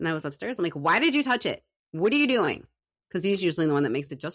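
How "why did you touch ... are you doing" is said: mock loud, demanding, accusing yell. Retelling confronting a coworker who touched the schedule: imitating someone yelling. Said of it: "I yelled at him today".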